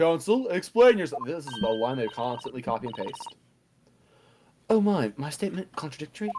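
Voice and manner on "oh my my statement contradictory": put-on cutesy uwu voice, higher. Voicing the counsel's reply to being told to explain himself, in a cutesy uwu voice. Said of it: "You decided to do the uwu voice for him".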